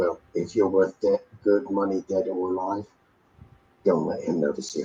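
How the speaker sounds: hushed whisper. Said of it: "I'm just gonna whisper out to the group".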